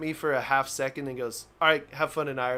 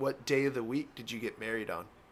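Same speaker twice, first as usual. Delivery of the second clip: put-on stern voice, quieter; 3 semitones lower, 5 dB quieter than usual. Retelling a customs officer's questions about a honeymoon trip: imitating a stern customs officer. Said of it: "he's pretty stern".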